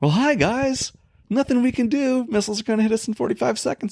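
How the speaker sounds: very high, chirpy, cheery and bright voice. Describing missiles closing in, the speaker does a mock-cheery Eddie impression. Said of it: "Being all cheery".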